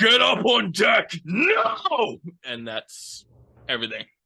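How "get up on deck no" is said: very loud, high, very slow drawn-out hollering. A character yells down into the cabins from the deck: yelling. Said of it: "he'll just yell down into the cabins".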